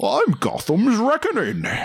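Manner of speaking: very high, swooping, hammed-up bad put-on Scottish accent. Talking about The Dark Knight Rises, quoting in a Bane voice, like bad Sean Connery. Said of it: "that Bane voice if he wasn't doing a bad Sean Connery impression".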